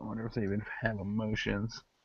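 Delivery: muttered under breath. Retelling what a man said, muttered under his breath. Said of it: "he kind of says under his breath".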